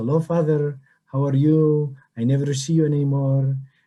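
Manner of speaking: put-on beautiful Greek accent. Retelling how a woman the speaker grew up around greeted him, imitating Evangelia's Greek accent. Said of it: "with her beautiful Greek accent".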